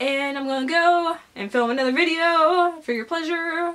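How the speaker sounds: musical lilting voice. Signing off a video before filming another one: musical kind of voice. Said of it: "I'm doing a musical kind of voice".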